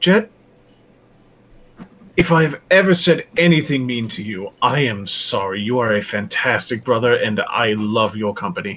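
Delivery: solemn, grave delivery. A player as Chester speaking to his brother Jet, as if saying last words. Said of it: "why are you talking like it's the last words you'll ever say?".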